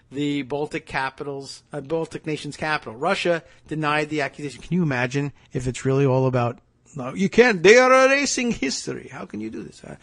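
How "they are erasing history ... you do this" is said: Transylvanian-accented speech. Speaker voices Russia's side of the accusation: Transylvanian accent. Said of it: "Transylvanian. That's my, my go-to Central European accent".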